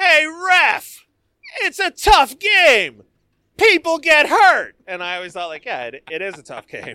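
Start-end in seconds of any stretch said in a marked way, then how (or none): 0.0-4.7 very high, very loud, slow, drawn-out arena yell. Recalling a fan in the nosebleeds yelling at the ref: retelling a yell. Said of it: "some dude from the nosebleeds yells out".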